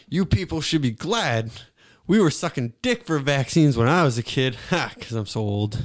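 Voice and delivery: low, put-on voice. Doing a joking impression: Joe Biden impression. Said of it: "All right, Biden".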